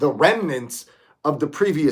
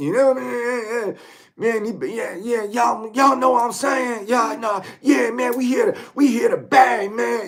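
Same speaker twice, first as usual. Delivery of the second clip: brash, high dude voice with long drawn-out "man"; 7 semitones higher than usual. Describing a loud guy in the back of a bare-knuckle crowd, imitating his brash talk. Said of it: "He's like loud".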